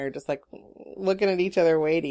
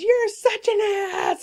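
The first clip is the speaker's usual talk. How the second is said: slow, high-pitched screaming. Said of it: "And she screams".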